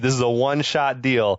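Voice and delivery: ordinary talk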